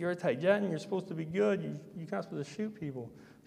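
earnest, high-pitched pleading and begging tone. Retelling how a woman reacted to being told she was shot, imitating someone pleading. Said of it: "She was pleading and begging".

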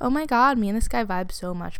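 plain

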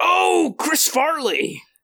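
very high, badly botched yell. Joking about a movie character, doing a terrible Chris Farley impression. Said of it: "that was a terrible Chris Farley impression".

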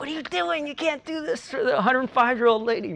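shrill, very high-pitched scolding yell. Retelling how the tennis pro yelled at a friend: imitating a yell. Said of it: "yelled at him".

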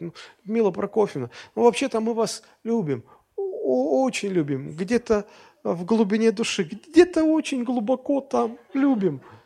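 put-on pitiful, squeezed-out voice. Retelling how a cornered man answers a woman at last, mimicking a plaintive forced plea. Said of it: "И он так жалобно из себя выдавливает".

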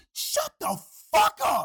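very high, shrill, belted-out scream. Near a restaurant, a woman on the corner shouts; retelling a woman belting out. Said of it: "this woman belts out".

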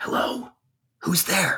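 hushed whisper, calling out. Player's character stays deep in cover and calls into a cave, whispering into the cave. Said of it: "I'm whispering into the cave".

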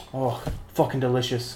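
seductive, sultry TV cooking-show host voice. Describing a chef's YouTube videos: Gordon Ramsay impression. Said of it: "he's like".

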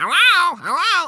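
very high, very loud, shrill parrot chatter voice. Describing free birds from the back of a pet shop: parrot voice. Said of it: "They have their parrot voice".

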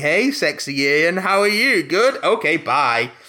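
very slow alien voice, every word dragged out. Retelling what the alien at the window says: imitating a Sensorite. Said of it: "the Sensorite at the window just going".

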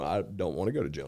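plain

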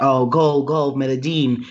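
ordinary talk

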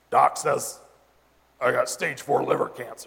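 put-on gravelly, growled voice like a rough old biker.

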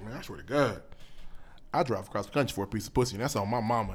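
mock dead-serious voice. Retelling what his cousin told him and his buddy, imitating a dead-serious voice. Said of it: "He said it in the most serious voice".

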